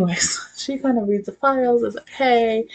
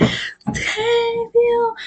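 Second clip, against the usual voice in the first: play-acted, very high, thrilled voice; 13 semitones higher than usual. Retelling an old man rushing to share great news, acting out super excitement. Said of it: "he's like super excited".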